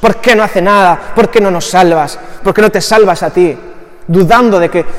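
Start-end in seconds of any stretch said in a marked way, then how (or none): none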